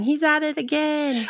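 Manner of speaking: sudden, high-pitched yelled exclamation. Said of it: "Rex just yelling".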